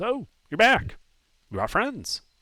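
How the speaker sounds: shrill, swooping, very high squeaky gnome voice. Game master voicing a gnome greeting the players who came back, high squeaky voice. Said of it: "in a high squeaky voice kind of says".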